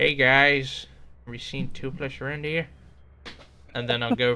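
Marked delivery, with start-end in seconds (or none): 0.0-2.7 put-on cartoon character voice, louder. Showing the voices done at home out of boredom: Hiccup voice. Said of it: "try to sound like Hiccup".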